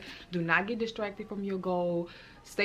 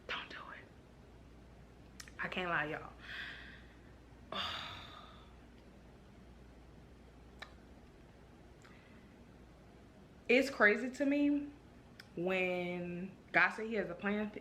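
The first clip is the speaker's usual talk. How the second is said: near tears, emotional, much quieter; 8 dB quieter than usual. Talking to y'all about surrendering to God's plan: on the verge of tears. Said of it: "I'm about to get emotional".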